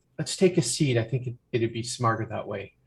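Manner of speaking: hushed, soft, confiding half-whisper. A game narrator voices a character who touches a player's shoulder mid-argument: half-whispering. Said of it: "they whisper".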